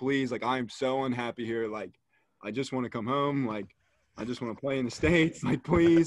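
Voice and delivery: acted-out pleading, begging tone. Retelling how you begged a guy for a contract, retelling begging. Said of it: "I begged this guy".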